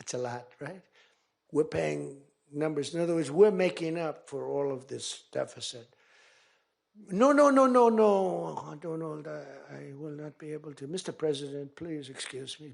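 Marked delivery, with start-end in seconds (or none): 7.1-12.7 put-on French accent, drawn-out no. Retelling a phone call with France's leader: Emmanuel Macron impression with French accent. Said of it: "I love the French accent".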